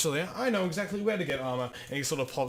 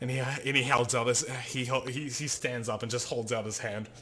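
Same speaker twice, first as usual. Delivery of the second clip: normal talking voice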